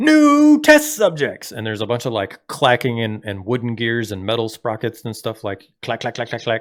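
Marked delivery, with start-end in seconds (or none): 0.0-1.5 put-on shrill, screechy old-woman voice, very high and loud. Narrating a game scene, voicing a cackling figure down the hallway: screechy old woman voice. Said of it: "like old woman voice go".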